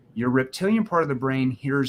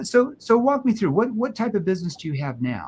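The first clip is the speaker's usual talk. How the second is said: genuinely inquisitive, curious, pitched-up tone; 6 semitones higher than usual. Demonstrating how to ask someone a question, in a curious tone. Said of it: "if I'm asking a situation question in a curious tone".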